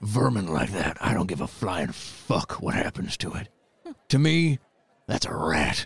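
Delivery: deep, hulking, scornful, contemptuous lion-like giant voice. The game master voices a seven-foot Leonin looking back down at Valros. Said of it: "One is a massive 7-foot-tall Leonin. / One is a massive 7-foot-tall Leonin. / [name] addresses you, / Breor hasn't killed anyone in the tournament yet".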